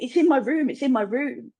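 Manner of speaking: play-acted crying, tearful, repeated begging. Retelling crying on parents' bed at night, imitating own past crying. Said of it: "I'm crying on my mum and dad's bed".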